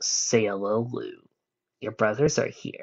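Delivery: ordinary delivery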